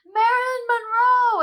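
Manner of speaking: put-on Italian accent, loud, high-pitched and belted out. Retelling what their great uncle said in grandmother's kitchen, in an Italian accent. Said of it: "and like an Italian accent".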